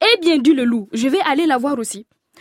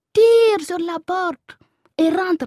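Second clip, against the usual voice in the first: sugary, honeyed, coaxing sweet-talking voice; 3 semitones higher than usual. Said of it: "Le loup lui parla mielleusement".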